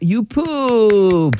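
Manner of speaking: all-happy, cheery, high, "pooped" drawn out. Demonstrating one phrase said with different emotions, happy. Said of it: "all happy".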